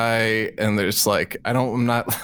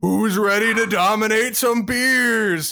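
mock rallying yell, very high, "beers" stretched out; 10 semitones higher than usual. Recounting how someone in a car packed with six guys shouted; retelling a shout. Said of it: "somebody yells, shouts".

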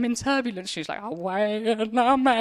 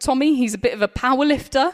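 normal talking voice

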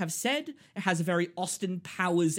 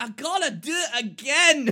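put-on stoned voice, higher and louder; 7 semitones higher, 7 dB louder than usual. Retelling Mike Myers wanting to redo his lines: imitating Mike Myers sounding high. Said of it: "he was high off a fat bastard and was like".

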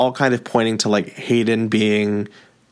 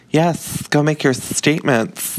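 put-on lisp, much higher; 5 semitones higher than usual. Retelling a book scene, the speaker voices Hayden's reply with a lisp.

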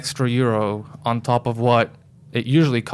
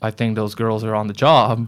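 ordinary talk

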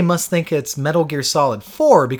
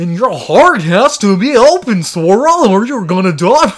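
goofy, mocking, high, loud cartoon-character voice; 6 semitones higher, 8 dB louder than usual. Complaining that Mickey and Goofy explain a game's story, in a stupid cartoon voice. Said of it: "use their stupid cartoon voices".

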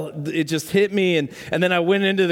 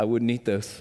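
very quiet murmur, barely above a hush; 7 semitones lower, 6 dB quieter than usual. Retelling what a guy the speaker lived with said: imitating someone speaking very quietly. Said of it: "very quietly said".

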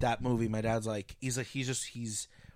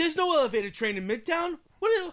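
very high, raised, put-on hollering; 5 dB louder than usual. Retelling how dad reacts to a movie: imitating dad yelling at tv. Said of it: "And he's yelling at the T V".

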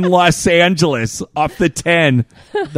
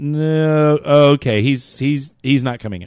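ordinary talk

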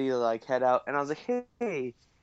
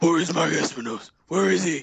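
loud, gritty, dark superhero voice, pushed hard; 3 semitones higher, 5 dB louder than usual.

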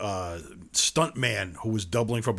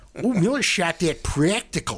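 mocking put-on Chicago accent, loud and high; 8 semitones higher, 5 dB louder than usual. Ranting about people calling a movie practical, mocking a Chicago accent. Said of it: "These fucking Chicago accents going".

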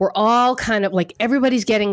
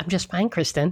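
put-on formal voice, quieter; 2 semitones lower, 6 dB quieter than usual. Repeating the guest's greeting back: imitating Sarah's professional tone. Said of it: "What is that?".

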